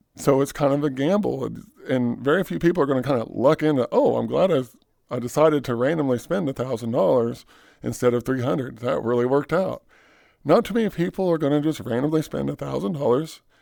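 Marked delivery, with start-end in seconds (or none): none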